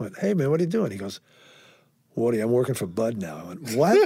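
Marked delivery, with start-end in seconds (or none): 2.2-3.4 put-on New England accent. Retelling a phone call from the man who ran his old club, new england accent. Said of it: "New England accent".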